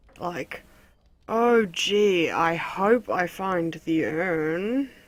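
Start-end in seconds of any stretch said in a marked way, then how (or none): 1.3-4.9 loud, very slow, brimming sarcasm, the word urn stretched. Picking a game dialogue option and saying it aloud, brimming sarcastic voice. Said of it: "say it in like a brimming, sarcastic voice".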